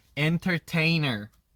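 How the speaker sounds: constricted, tensed, tightly pinched American pronunciation. Teaching accents, contrasting the word with the Australian way: squeezed-tight American pronunciation. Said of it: "엔터테이너 되게 이렇게 쪼여서 나오잖아요".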